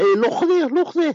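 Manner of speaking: very high put-on Scouse Liverpool accent. Talking with someone about UK dialects, slipping into a put-on Liverpool accent. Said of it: "I'm talking like a Liverpoolian now".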